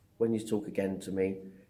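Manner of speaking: usual speaking voice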